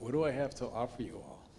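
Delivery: ordinary delivery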